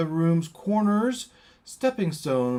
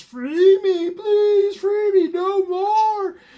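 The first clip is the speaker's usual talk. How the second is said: very high, loud, tormented crying wail; 7 dB louder than usual. Narrating the Legion's voices, one of them crying out. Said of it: "another cries".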